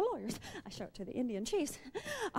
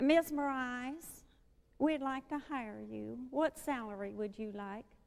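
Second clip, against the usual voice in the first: put-on twangy, whiny voice on every phrase. Retelling a job offer from Florenz Ziegfeld: twangy whiny Florenz Ziegfeld voice. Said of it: "in that twangy, whiny voice of his".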